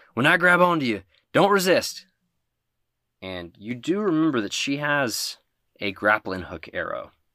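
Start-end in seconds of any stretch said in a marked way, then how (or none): 0.1-2.0 high, loud shouting yell. Voicing a character in a storm, shouting over the wind: character yelling over a storm. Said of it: "she yells".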